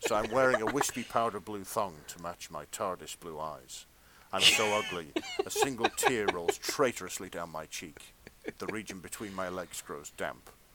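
short sensual voice. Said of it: "my sort of brief erotica voice".

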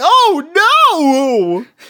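very high, loud, swooping cartoon voice, "oh" stretched. Imitating how Usopp sounds in the dub: Usopp's voice. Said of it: "he just sounds like".

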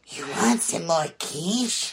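odd, high-pitched creature-like voice. Retelling a story character's line, which a listener says sounds like Gollum: Gollum-like voice. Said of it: "So now she sounds like Gollum".

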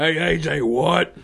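very slow, drawn-out, every word stretched. Doing an impression of Gallows doing Stone Cold. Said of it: "That's an impression of Gallows doing an impression of Austin".

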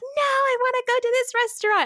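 mock very high, shrieking child's screaming tantrum. Retelling a little brother's tantrum at the wrong restaurant: imitating a child screaming. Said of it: "he would start screaming, like".

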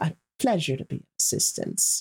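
speaking through gritted, clenched teeth. After giving directions, a woman ends the exchange: through gritted teeth. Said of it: "she says through gritted teeth".

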